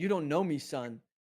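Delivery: hard-driving, motivational yelling. Retelling a runner passing a cameraman on a hill: imitating someone yelling. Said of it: "he was just yelling".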